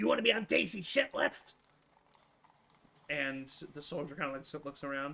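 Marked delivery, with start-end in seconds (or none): 0.0-1.5 raised-pitch put-on creature voice. Voicing a goblin who confronts an elf: goblin voice. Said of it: "the goblin looks up at him, and he says".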